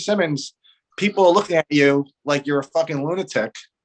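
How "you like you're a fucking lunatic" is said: ordinary talk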